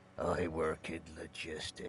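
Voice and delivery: quiet, flat, unenthusiastic tone.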